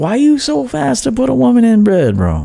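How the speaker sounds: fatherly swooping tone. Addressing dating coaches directly: like talking to his son. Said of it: "like I was talking to my son".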